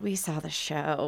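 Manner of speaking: put-on disapproving voice. Retelling what a woman who had been at the show said, mimicking a disapproving tone. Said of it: "In that tone of voice with, like, this terrible look on her face".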